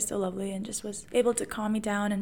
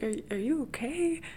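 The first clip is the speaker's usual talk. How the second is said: put-on puzzled, bewildered, uncertain tone; 4 semitones higher than usual. Retelling how an elderly woman spoke to her while she was crying, imitating a bewildered woman. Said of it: "she was so bewildered".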